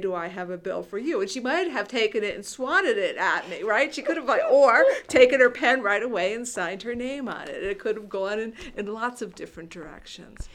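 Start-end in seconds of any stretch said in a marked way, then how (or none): 0.0-1.2 put-on playful, mock-teasing tone. Speaker imagines sitting down beside her to ask, retelling a teasing question. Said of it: "teasingly say".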